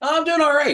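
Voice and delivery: very high, pumped-up, fired-up yell. Answering how he's doing today, yelling. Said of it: "why you yelling at me?".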